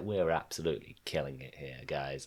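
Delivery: mocking cocky tone. Mocking a band who think they're great: imitating smug bravado. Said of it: "they clearly think they're the shit here".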